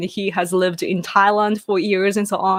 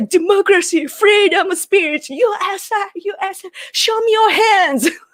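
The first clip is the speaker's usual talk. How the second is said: stock American hero voice, very high-pitched and drawn out; 12 semitones higher, 4 dB louder than usual. Retelling how a friend acts an American in comedy videos: imitating someone playing an American. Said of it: "That's your impression of America?".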